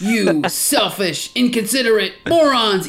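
acted high, stretched yell. Retelling a comic scene where the hero yells at the partygoers, retelling a yell. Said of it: "he yells at them".

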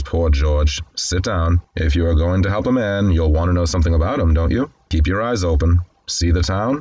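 ordinary talk

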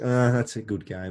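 put-on disappointed tone. Imitating another speaker's reply about a game: imitating a disappointed tone. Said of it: "it sounded like you were disappointed".

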